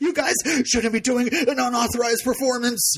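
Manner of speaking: put-on, very high-pitched, angry, scolding judge voice. Recapping a show scene with a judge: imitating an angry judge. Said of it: "one angry judge and he's like".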